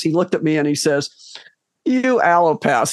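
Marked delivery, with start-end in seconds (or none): 1.8-2.9 mock, put-on condescending tone. Retelling what a naturopath said to him, mock-condescending. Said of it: "very condescendingly".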